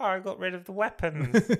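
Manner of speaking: really high-pitched, mincing voice. Describing a scene to a co-host, imitating Damien: Damien's really high voice. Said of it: "with a really high voice going like".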